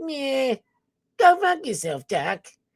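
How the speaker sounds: high cartoon rabbit voice. Asked what Bugs Bunny sounded like, the speaker answers in Bugs Bunny voice. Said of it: "What did Bugs Bunny sound like?".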